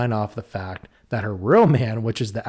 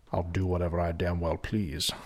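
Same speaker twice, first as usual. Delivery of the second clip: deep, low movie-star voice; 6 semitones lower, 9 dB quieter than usual. Answering back as the voice after being told to leave: Sean Connery voice. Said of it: "There was Sean Connery".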